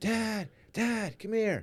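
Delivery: mock very high, drawn-out child's yell. Retelling a son calling from his room at dawn: imitating a child screaming for attention. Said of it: "I hear him screaming for me".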